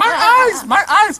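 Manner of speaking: high, loud, mock dramatic wail of pain. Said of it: "He's like".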